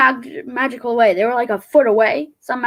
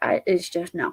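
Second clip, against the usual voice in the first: normal talking voice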